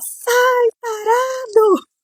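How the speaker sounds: play-acted, very high, shrill screaming outburst. A woman retells yelling at a man touching her leg on the bus: retelling her own yell. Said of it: "Eu comecei a gritar".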